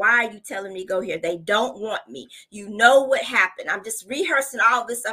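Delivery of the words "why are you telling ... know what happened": put-on fussy complaining voice. Retelling own complaints while walking into the school: imitating own past fussing. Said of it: "I'm still fussing".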